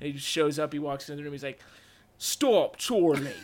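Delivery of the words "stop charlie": put-on clumsy, bad English accent, very slow. Retelling a scene where a character tries an English accent: Dennis's bad English accent. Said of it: "Dennis tries to do a, a English accent".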